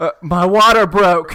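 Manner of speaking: very loud, drawn-out, alarmed, panicked cry. Acting out an imagined moment when a cup bursts in a theater: mock panic. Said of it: "panic and go".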